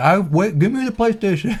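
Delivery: put-on words mushed through a full mouth. Doing an impression of a listener, Dennis, while eating: imitating Dennis eating. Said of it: "my impression of Dennis eating".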